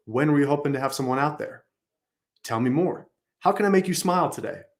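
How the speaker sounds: falling pitch at the ends, on there and today. Demonstrating questions on a phone call, with downward inflection on questions. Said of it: "end our questions with a downward inflection".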